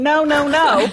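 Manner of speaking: high, loud screaming. Telling of a boy jumping off a wall into a pool, retelling a scream. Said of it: "I'm screaming".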